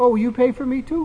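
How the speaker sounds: mock wide-eyed innocent tone, high and small. Retelling asking a man something at age ten, retelling an innocent question. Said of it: "very innocently".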